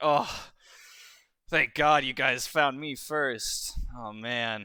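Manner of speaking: sighing with relief. Voicing a character who meets the three newcomers: sighing with relief. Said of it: "sighs a sigh of relief".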